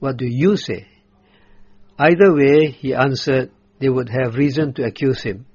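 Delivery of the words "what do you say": heavy emphasis on the word you. Retelling how they asked him, putting him on the spot, stress on you. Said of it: "The emphasis is on the word "you."".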